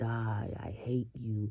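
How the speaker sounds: slow, drawn-out, hushed, sinister whisper. Retelling what a woman whispered to a newborn baby: imitating someone whispering. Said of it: "she would always whisper".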